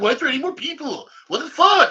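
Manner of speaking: very loud, very high, shrill, screaming fake rage. Asked to act angry on the spot, the speaker rants: fake angry rant. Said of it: "Can you be angry right now".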